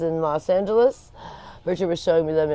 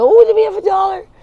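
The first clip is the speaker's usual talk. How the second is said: put-on shrill, very high, loud, booming gleeful squeal; 12 dB louder than usual. Retelling asking for a dollar for the meeting: imitating her own excitement. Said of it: "I get so excited".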